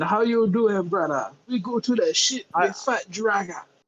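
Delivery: high, fake pseudo Caribbean accent. Speaker imitates a character called a racist caricature: fake West African-Caribbean accent. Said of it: "pseudo West African Caribbean".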